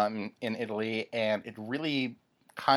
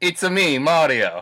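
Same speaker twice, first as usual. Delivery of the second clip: very loud, high, exaggerated Italian accent; 6 semitones higher, 10 dB louder than usual. On a show, right after reading the intro, doing a Mario voice. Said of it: "Should I do the whole show in an Italian accent?".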